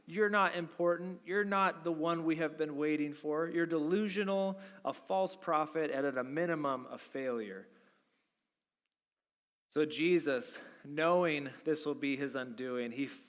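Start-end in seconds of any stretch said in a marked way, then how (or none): none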